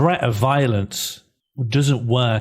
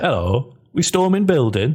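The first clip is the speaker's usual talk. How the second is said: put-on Yorkshire or Derbyshire accent; 4 semitones higher than usual. Mimicking the other speaker's greeting, in a Derbyshire or Yorkshire accent. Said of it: "I think it's Derbyshire".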